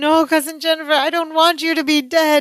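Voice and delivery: mock tearful, high, blubbering, sobbing pleading tone. Recapping a scene, acting out Balky's line to Cousin Jennifer: imitating Balky sobbing. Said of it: "He's sobbing".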